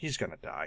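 very quiet, leaned-in close whisper. Retelling what a wife said during a movie: imitating a whisper. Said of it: "my wife leans into me and whispers".

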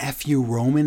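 ordinary delivery

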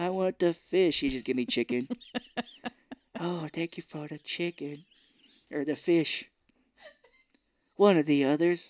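put-on old man accent, sounding very old. Joking about being very old someday, ordering food, in a put-on old man accent. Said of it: "You had like a Japanese accent there".

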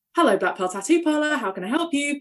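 high, polite, courteous tone. Retelling answering the tattoo parlor phone as an apprentice, in a phone voice. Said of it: "a phone voice".

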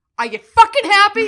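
very loud, high, shrill, furious screaming. Retelling snapping at mom on the phone: retelling an angry outburst. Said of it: "in my most professional way".

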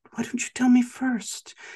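high, fake-helpful coaxing tone. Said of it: "he pretends to be really helpful".

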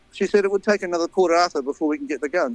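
plain

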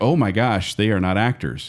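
ordinary delivery

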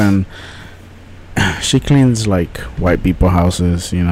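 voice brought down low. Someone telling others about helping their mom clean houses, in a lowered voice. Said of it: "I have to say that in a lower voice".

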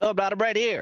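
very high, squeaky little gnome voice. A show host plugs a regular's podcast, sounding like an underpants gnome. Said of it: "that sounded like an underpants gnome".

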